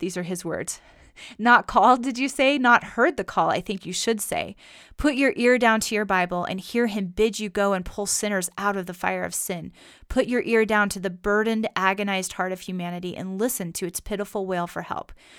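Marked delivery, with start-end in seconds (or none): none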